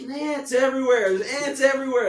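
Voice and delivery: play-acted alarmed screaming, very high. Retelling the band's percussion player waking at night to ants, retelling a scream. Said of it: "and he's screaming".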